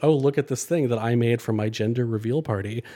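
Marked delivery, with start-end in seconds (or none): none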